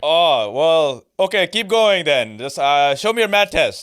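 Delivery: put-on Pakistani accent. Playing a dad talking to Hassan: Pakistani dad accent. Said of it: "hit me with a fucking Pakistani dad accent".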